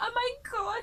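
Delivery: high, panicky inner-voice tone.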